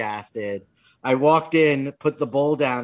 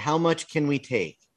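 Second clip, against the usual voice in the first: mock very sweet little-girl voice, quieter; 4 dB quieter than usual. Retelling how a little girl asked for the last Halloween candy; imitating her very sweetly. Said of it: "very sweetly said".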